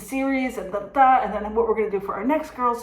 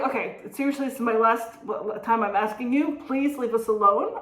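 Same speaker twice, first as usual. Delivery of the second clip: ordinary talk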